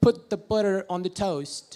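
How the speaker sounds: put-on, attempted American accent. Trying out accents without practice, speaking in an American accent. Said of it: "about American. ... I'll try to speak something about it".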